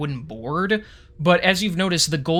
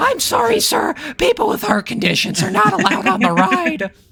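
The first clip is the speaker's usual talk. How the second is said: put-on very high, loud, cracking, squeaky teen voice; 14 semitones higher, 5 dB louder than usual. Joking as a ride attendant turning someone away: Simpsons teenager voice. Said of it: "make a character sound like the Simpsons teenager".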